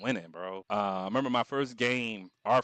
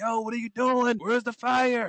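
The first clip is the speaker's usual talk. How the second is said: very high, screaming, angry yelling; 13 semitones higher, 6 dB louder than usual. Recounting a school fire alarm, voicing the firemen at the speaker: retelling firemen's screaming. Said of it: "They screaming at me like".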